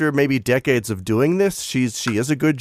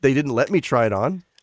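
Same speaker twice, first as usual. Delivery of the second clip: ordinary talk, nothing marked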